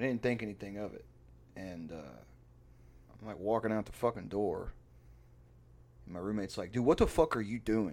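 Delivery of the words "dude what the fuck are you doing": put-on hostile, confrontational, aggressive tone. Retelling how his roommate stopped him at the door, retelling it real aggressive. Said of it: "Like real aggressive".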